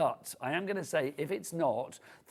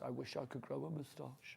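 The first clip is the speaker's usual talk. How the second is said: play-acted very quiet, woeful, tragic lamenting voice; 14 dB quieter than usual. Retelling what the director just said: imitating a very tragic voice. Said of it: "He just said in a very tragic voice".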